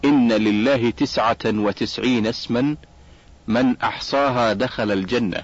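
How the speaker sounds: ordinary talk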